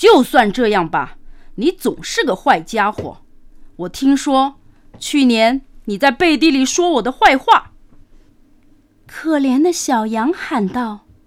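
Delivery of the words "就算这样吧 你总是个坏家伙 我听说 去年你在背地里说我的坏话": hostile, bullying, fierce, blustering wolf voice. Narrator reads the wolf's line to the lamb, fierce and aggressive. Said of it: "狼气势汹汹地说".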